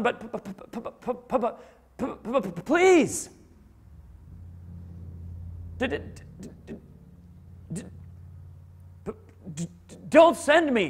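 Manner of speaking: very slow, heavy stutter with repeated consonants. Acting out Moses pleading with God: imitating Moses stuttering. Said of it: "he's saying this with that stutter".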